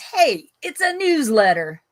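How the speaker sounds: unhurried, slow put-on Italian accent. Quoting what someone said, trying to say it with an attempted Italian accent. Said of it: "I'm trying to say it with an Italian accent".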